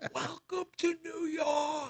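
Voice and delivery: mock very high, shrill scream. Rider retelling hitting a crater on the road while riding, retelling own scream. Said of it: "I screamed it as I'm riding".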